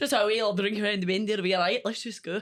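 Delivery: put-on Scottish accent, done playfully for fun. Mid-conversation among the group, speaking in a Scottish accent. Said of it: "I love doing a Scottish accent".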